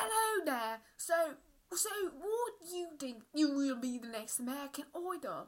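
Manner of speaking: clumsy, bad, put-on British accent. Playing someone greeting Simon about American Idol, in a bad British accent. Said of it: "Do you guys have my British accent?".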